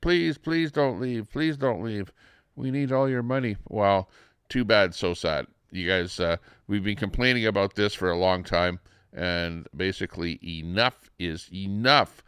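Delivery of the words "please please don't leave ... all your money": put-on pleading, begging voice, high pitched. Imitating people in Quebec begging Alberta not to leave: mock pleading. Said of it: "or in Quebec".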